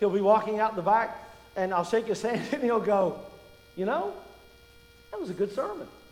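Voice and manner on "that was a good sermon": surprised, caught off guard, pitched-up voice. Retelling a comment after a sermon while shaking hands: Larry Whitfield, mock-surprised. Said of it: "He always sounds surprised".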